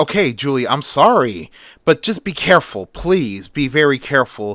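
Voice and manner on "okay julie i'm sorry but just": usual speaking voice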